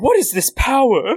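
very high, silly, comic put-on character voice. Retelling Pegasus reacting to the summoned Blackluster Soldier, funny put-on character voice. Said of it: "instead of my funny Garfield the Deals Warlock version".

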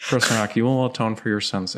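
totally flat, even, monotone villain voice. Asked to impersonate a voice, addressing Chris Rock: monotone Jigsaw voice. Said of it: "it's even more monotone".

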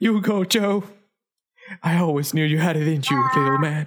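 tearful, crying voice. Voicing a character waving goodbye with a handkerchief, crying. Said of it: "waving them goodbye and crying".

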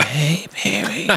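hushed stage whisper. Introducing a friend who will man the booth, imitating a whisper. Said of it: "He's like".

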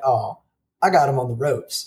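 usual speaking voice

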